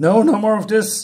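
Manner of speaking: mock frantic panic, high and loud. Retelling a comic scene where the professor panics: acting out panic. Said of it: "And then he's panicking".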